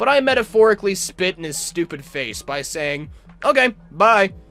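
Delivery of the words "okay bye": mock offhand, careless, blasé tone, pitched up. Retelling own reply to the manager who fired them: imitating own blasé reply. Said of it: "in a blasé way".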